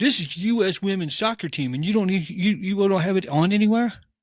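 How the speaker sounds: high-pitched, angry ranting. Speaker retells a guy getting mad about which tv has the game, imitating his anger. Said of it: "And he's all mad".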